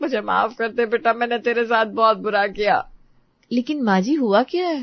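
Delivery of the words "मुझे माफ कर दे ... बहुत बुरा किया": crying while speaking, tearful and pleading. Begging the daughter-in-law for forgiveness at her feet, crying while speaking. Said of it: "आप इस तरह रो क्यों रही हैं?".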